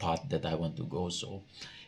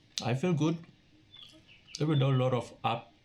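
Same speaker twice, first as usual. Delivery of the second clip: talking through food while chewing, pitched up; 8 semitones higher than usual. Talking to viewers about the year ahead, eating while talking. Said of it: "sorry for eating and talking at the same time".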